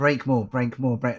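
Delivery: ordinary talk, nothing marked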